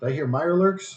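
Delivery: shouting. Voicing a woman who pokes her head out the door: shouting. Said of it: "she shouts at you".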